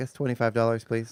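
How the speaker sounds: normal talking voice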